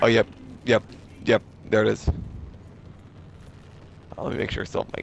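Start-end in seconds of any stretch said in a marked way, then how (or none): 4.2-5.0 voiceless, whispery, dying croak pushed out. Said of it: "you sound like you're dying".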